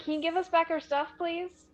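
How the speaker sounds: polite shouting. Calling out to a thief who took Racha's bag, yelling. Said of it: "She's just yelling at a tree again".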